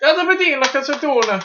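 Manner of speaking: worst fake Italian accent, very high-pitched. Signing off a video about Fellini films: bad Italian accent. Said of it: "worst Italian impression ever".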